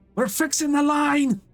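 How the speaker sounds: very high shout, as if from far off. Narrating a story, voicing an engineer answering a shouted question, shouting back. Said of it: "One of the engineers shouts back".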